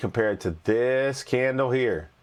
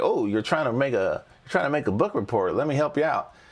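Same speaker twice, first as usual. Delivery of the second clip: tiny, little cartoon paperclip voice; 2 semitones higher than usual. Explaining a chart tool, imitating the cartoon paperclip offering help: Microsoft Clippy voice. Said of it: "this little cartoon character. It looks like a paperclip, and he'd say".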